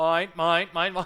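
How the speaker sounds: loud, high-pitched seagull squawk. Picturing the Covenant as seagulls, doing the Finding Nemo seagull noises. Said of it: "the Covenant is doing the seagull noises".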